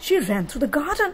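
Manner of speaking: ordinary delivery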